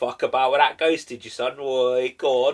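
put-on Cockney accent. Describing how a ghost show was expected to sound: mock cockney accent. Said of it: "I thought it was going to be a little bit more like".

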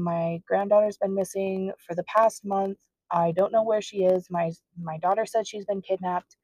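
ordinary talk, nothing marked

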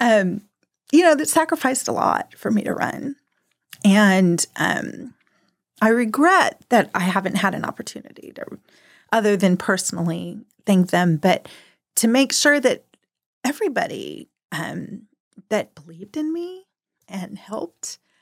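slow, slightly emotional, holding it together. Speaker thanking husband and daughters who sacrificed for her run; getting emotional. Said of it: "I'm going to get a little emotional".

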